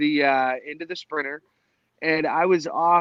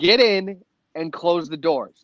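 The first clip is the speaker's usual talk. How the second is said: normal talking voice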